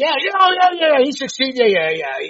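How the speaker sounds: high, loud, over-the-top cheering fan voice.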